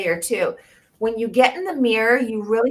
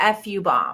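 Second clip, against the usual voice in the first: usual speaking voice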